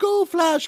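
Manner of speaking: high-pitched cheering.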